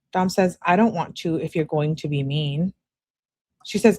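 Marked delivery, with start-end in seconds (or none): none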